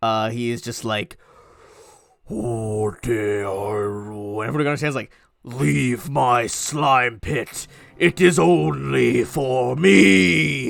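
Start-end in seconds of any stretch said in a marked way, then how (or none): 2.3-10.7 booming, very slow, very drawn-out, rough demonic rumble. Narrating a fight, voicing the attacking creature: booming infernal voice. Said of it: "in infernal and like a booming voice".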